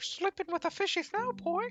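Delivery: very high, squeaky cartoon voice. Imagining Mickey Mouse as a gangster, speak in a Mickey Mouse voice. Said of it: "Just imagine Mickey Mouse saying".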